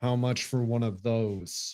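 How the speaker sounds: strained, jaw-clenched speech through gritted teeth. In-character at a table, forcing a smile and asking a price, through gritted teeth. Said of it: "through gritted teeth".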